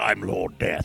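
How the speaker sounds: low, deep stock overlord-style villain voice. Retelling an audition for the character Lord Death: Lord Zed-style villain voice. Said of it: "kind of a Lord Zed thing".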